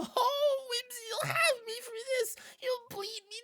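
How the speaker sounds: tiny, squeaky, very high little imp voice. The storyteller of a role-play scene voices an imp speaking to Whimsy, in an imp character voice. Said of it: "he's putting his little hands on his head".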